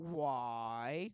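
acted loud, drawn-out, condescending motherly reproachful tone. Retelling how a mother asks why, imitating mom's condescending tone. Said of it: "you know that condescending tone that your mother uses when she's talking to you, like".

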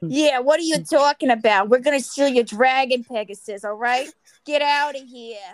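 loose, vague put-on New York accent. Podcast host voicing a bandit robbing Lady Hermione: vaguely New York accent. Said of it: "vaguely New York sounding accent".

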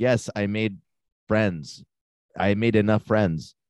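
simple, halting broken-English phrasing. Retelling what a girl from Ukraine replied: imitating broken English. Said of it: "broken English".

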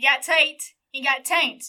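put-on southern accent. Joking about how the name Tate sounds in a southern accent: southern accent. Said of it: "especially when you're using a southern accent".

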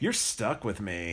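pressing, urgent, low, intense stage half-whisper. Speaker acting out a scene with another speaker, playing Claire, half-whispering intensely as Claire. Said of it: "whispers even more intense".

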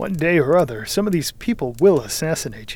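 ordinary delivery

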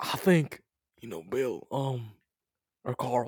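put-on old man voice. Addressing Billy and Carl, in an old man voice. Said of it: "Your old man voice sucks".

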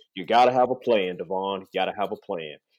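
put-on low, deep, drawling Southern accent. Quoting a trainer's advice, in a deep Southern drawl. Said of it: "in a really deep Southern drawl".

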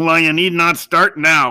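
grumbling. Reading a story aloud, voicing a man answering a boy, grumbling. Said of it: "grumbled Ezra".

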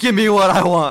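put-on crying scream. Retelling a wrestling angle, imitating Batista: imitating Batista crying and screaming. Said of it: "just crying, screaming".

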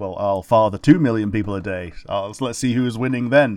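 ordinary talk, nothing marked

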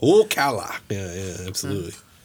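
bad attempt at an Irish accent. Talking about an Irish or Scottish band, trying the worst accent attempt. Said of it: "That was the worst accent attempt".

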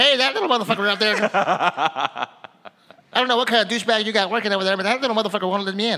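very high, loud little leprechaun put-on voice. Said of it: "That's the way he sounds, too".

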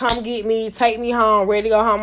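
mock crying, pleading voice. Retelling calling mom after a fight, imitating own crying. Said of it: "I called my mom crying".

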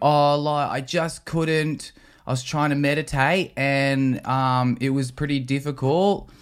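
put-on Australian accent. Retelling a news interview as the retreat attendee: Australian current affairs interviewee accent. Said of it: "Are you adding an accent too?".

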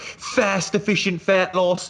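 put-on very high, sliding into butchered Australian accent. Recalling Steve's interlude on a podcast, do a bad Steve impression that comes out Australian. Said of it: "I don't know why he's Australian now".

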